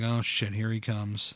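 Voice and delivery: low, soft, annoyed muttered voice. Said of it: "they're like".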